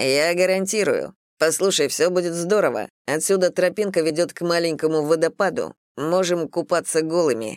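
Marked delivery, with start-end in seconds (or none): none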